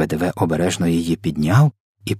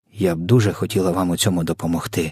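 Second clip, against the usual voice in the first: ordinary delivery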